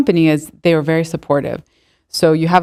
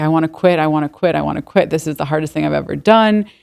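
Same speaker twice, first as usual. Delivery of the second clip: put-on tearful, crying voice. Retelling own words from leaving work each day: imitating own past crying. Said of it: "leaving every single day from work crying".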